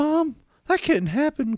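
play-acted frightened kid, very high, scared voice. Retelling asking Mom about a snake from the toilet: imitating own scared younger self. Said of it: "my scared ass little insecurity self goes".

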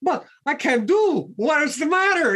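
put-on Italian accent, exasperated. Speaker quoting a man who said this to him, imitating his italian accent. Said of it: "in his Italian accent and he said".

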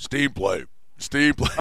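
put-on robotic, mechanical voice. Describing the kids' alert, imitating it in a robotic tone. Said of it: "it's this robotic tone".

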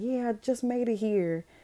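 thrilled excited voice. Retelling a voicemail from Choi, imitating excited speech. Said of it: "him all excited".

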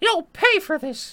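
high, loud squeaking voice. Retelling a cartoon scene after Goofy gets crushed, quoting Mickey in a Mickey Mouse voice. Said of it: "That's a pretty good Mickey voice".

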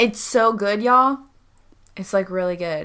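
sarcastic tone. Praising a just-finished story episode to another speaker: sarcastic. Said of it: "You sound very sarcastic".

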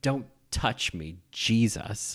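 rejecting, recoiling, pulling-away brush-off tone. Recalling a favourite line reading from a crying scene: Meryl Streep line reading. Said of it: "I've held on to that line reading".

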